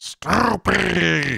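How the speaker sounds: high, rough, rasping voice. Asked to say Snoopy like the Ghostbusters game, Ghostbusters game voice. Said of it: "Say Snoopy in the Ghostbusters game voice?".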